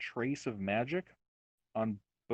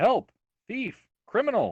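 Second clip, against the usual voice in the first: shrill, very high, very loud shout; 10 semitones higher, 10 dB louder than usual. A game master voicing a mended staff that calls out to the players, shouting. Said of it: "you hear it shell shout".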